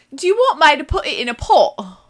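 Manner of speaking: put-on loud, high Cumbrian accent. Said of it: "the redneck accent of England".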